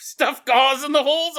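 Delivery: high-pitched, loud shout.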